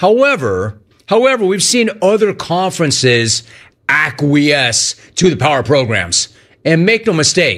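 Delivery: ordinary delivery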